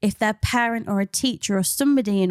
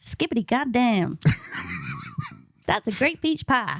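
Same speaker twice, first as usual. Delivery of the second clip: put-on Southern US accent with swooping pitch. Joking about how a slang word sounds: put-on Southern American accent. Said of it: "Apologies to all, all Southern Americans".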